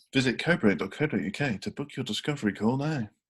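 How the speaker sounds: smooth, sexy, dodgy automated advert voice. Reading an ad line in a dodgy, sexy voice. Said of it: "some kind of dodgy, sexy voice?".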